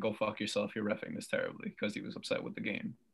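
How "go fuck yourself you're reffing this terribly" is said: ordinary talk, nothing marked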